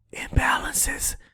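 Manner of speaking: whisper, like sharing a secret. Giving the audience a little trading secret, whispered 'imbalances'. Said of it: "I'm going to whisper it".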